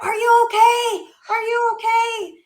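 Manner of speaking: play-acted, very high-pitched, loud screaming. Retelling strangers running over to help: imitating people screaming. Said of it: "they're screaming, like".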